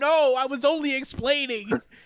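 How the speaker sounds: high crying out, like a hurt villain. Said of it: "cries out to his own body".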